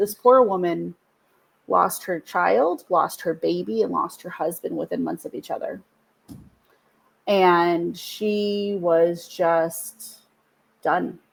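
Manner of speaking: slow, emotional, visibly moved delivery. Speaker recalls a grieving mother from one of their sessions, getting emotional. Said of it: "I'm going to get emotional".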